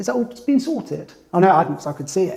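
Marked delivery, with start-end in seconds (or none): 0.0-1.1 upper-class posh voice. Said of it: "I'm gonna put on the poshest voice I can".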